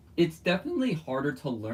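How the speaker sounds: voice breaking and cracking up high mid-phrase. Explaining how hard a puzzle is to learn: voice crack. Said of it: "That was a voice crack".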